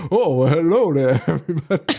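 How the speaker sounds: absurd put-on Cajun accent, played for laughs. Retelling how a movie character talks: imitating a fake cajun accent. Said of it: "fake Cajun accent is pretty funny".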